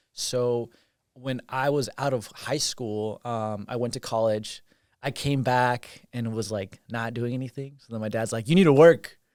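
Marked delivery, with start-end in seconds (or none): 8.4-9.0 very loud, intense fatherly voice. Retelling what a parent said about getting a job: deep-voiced impression of dad. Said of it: "I love your impressions of your dad".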